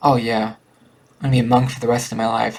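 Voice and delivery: mocking, sarcastic, disbelieving tone. Speaker shows how he says he'll be a monk for life: sarcastic, disbelieving. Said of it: "I say sarcastically, like I don't really believe it".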